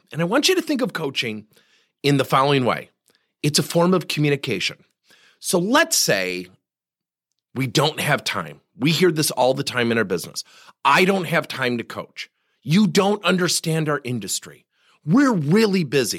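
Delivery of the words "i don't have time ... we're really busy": ordinary delivery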